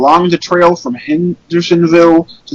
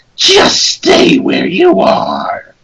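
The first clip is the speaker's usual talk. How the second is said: robotic, demonic, machine-like doll voice; 12 semitones higher than usual. Reading a creepy story, the Tails doll speaks in a robotic, demonic Tails doll voice. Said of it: "robotic, demonic voice of the Tails doll".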